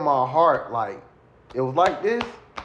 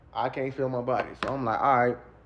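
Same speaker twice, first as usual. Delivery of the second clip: ordinary talk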